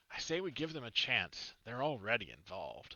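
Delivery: big, booming, carrying male voice. Narrating villagers reacting to a tree that appeared overnight: booming male voice. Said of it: "You hear a booming voice of a man".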